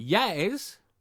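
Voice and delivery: smug, well-pleased tone. Confirming that the chili on the plate was made for the other speaker: proud, smug tone. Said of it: "you can hear in my tone of voice, I'm well proud".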